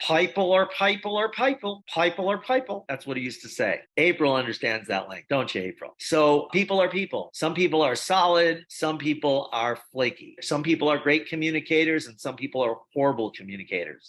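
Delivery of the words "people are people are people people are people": put-on broad, thick Kentucky southern accent, pitched up. Quoting a former top earner's stage line: imitating a thick southern accent. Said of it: "he had a thick Southern accent".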